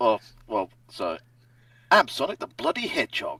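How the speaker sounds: very loud, booming, swooping, Australian-sounding cartoon hero voice. Asked to do one real quick, doing a Sonic impression. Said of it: "do a Sonic impression real quick".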